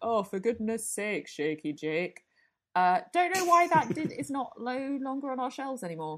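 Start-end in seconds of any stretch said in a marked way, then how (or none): 0.0-2.2 put-on Yorkshire accent kicking in. Recalling the voice that spoke to Shaky Jake, in a Yorkshire accent. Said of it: "this kind of Yorkshire accent that kicked in".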